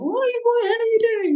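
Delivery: very high screamed outburst. Recalling childbirth and screaming at them, retelling own screaming. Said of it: "probably at least three times sort of screaming".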